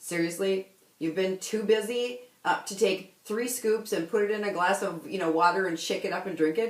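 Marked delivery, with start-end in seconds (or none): none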